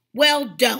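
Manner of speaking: loud, irritable, cranky, fed-up snapping tone. Narrator reads Broxholm's reply to the practicing piccolo player, snapping. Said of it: "he snapped".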